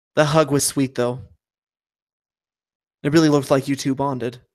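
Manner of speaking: sly, playful, needling teasing aside. Narrator voicing a woman who follows you and speaks to you, quiet, so only you hear. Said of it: "she says quietly enough that only you can hear".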